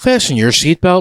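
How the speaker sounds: flight attendant announcement voice. Playing along after being told they sounded like a flight attendant, flight attendant announcement voice. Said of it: "sounded like a flight attendant".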